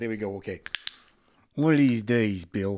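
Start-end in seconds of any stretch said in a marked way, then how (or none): 1.6-2.8 put-on New Jersey accent spoken through clenched teeth. Reading a character's threat aloud: New Jersey accent through clenched teeth. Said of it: "he said through clenched teeth".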